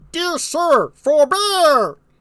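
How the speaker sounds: weird, very high, silly goofball voice. Performing a play reading, the speaker voices Albany and Cornwall in a weird voice. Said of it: "that's why I gave him a weird voice".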